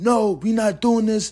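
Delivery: mock very high, drawn-out shouted yell. Speaker retells yelling as his brother chased people near a neighbor's house: retelling own yell. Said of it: "And I'm yelling".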